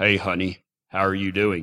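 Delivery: deep, low, soft, hushed man's voice. Retelling a relay phone call, quoting the guy who greeted them: imitating a guy on the phone. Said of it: "I hear this guy say".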